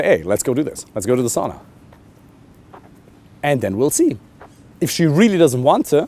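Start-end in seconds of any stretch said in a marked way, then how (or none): none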